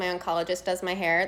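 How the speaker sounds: ordinary delivery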